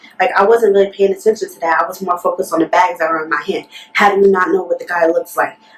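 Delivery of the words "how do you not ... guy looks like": ordinary talk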